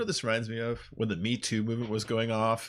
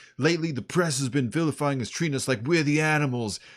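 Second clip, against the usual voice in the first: put-on thick, heavy movie-style New York cop accent; 4 semitones higher than usual. Retelling a police spokesman's press conference: heavy New York movie accent. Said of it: "heavy accent like in the movies".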